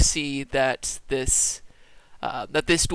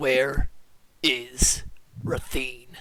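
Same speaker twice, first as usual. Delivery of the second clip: very curt, terse, cut-short delivery; 2 semitones lower than usual. Character pressing a blade closer demands an answer, curt, short voice. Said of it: "in a very curt, short voice".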